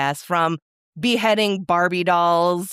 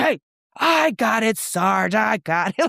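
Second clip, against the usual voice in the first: mock police officer voice, called out slowly; 3 semitones higher than usual. Describing Roseanne jumping into a fight: Jackie cop yell. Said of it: "does her like cop Jackie yell like".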